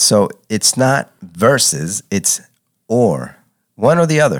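slow, deliberate delivery, spelled out word by word. Asked to repeat it for the audience, the speaker says it again slowly. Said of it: "I'll say it slow".

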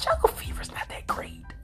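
soft, hushed whisper under the breath.

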